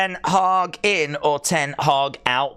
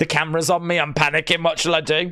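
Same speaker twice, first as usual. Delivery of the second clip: ordinary talk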